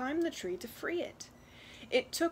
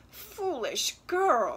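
groaned out, groaning; 3 semitones higher, 6 dB louder than usual. Reading a tale aloud, the mother answers her daughter's news, groaning. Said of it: "her mother groaned".

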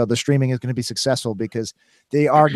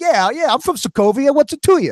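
put-on Brooklyn accent, much higher pitch; 12 semitones higher than usual. Joking about the character's fading accent, doing Scarlet Witch with Brooklyn accent. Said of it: "she will literally just be like from like Brooklyn".

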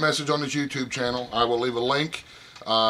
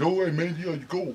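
put-on Connecticut accent with much higher pitch; 4 semitones higher, 3 dB quieter than usual. Telling a story, speaker quotes what a man said, in his Connecticut accent. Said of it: "he did it with that Connecticut accent".

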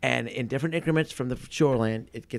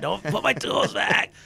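put-on very slow, creaky old man yelling; 8 semitones higher than usual. Joking about someone growing old in a rocking chair: imitating an old man yelling. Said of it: "Yelling at Fletcher over there".

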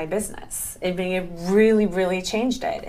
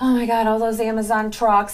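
acted super excited tone; 3 semitones higher, 4 dB louder than usual. Recalling hearing a service center was opening nearby: retelling super excited thoughts. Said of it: "I was getting like super excited".

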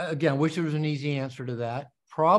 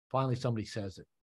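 usual speaking voice

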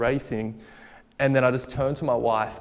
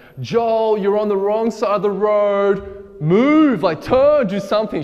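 alarmed, high, loud yell, "road" stretched out; 8 semitones higher, 5 dB louder than usual. Driver retells his wife shouting at him on the wrong side of the road, imitating Emma yelling. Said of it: "She's just yelling at me".

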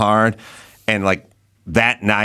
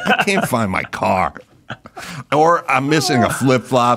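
mock grumbling, complaining tone. Acting out a hungover guy the next morning: imitating a hungover guy. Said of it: "sounds like the guy that's experiencing a hangover".

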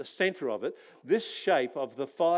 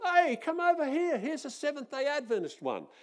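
mock very high, shrill call-out yell; 11 semitones higher than usual. Retelling how one guy searching the trees called the others: imitating someone yelling out. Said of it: "one guy yells out".

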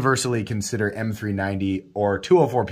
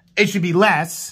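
mock complaining shout, higher pitch; 8 semitones higher, 3 dB louder than usual. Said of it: "what everybody's shouting blindly".

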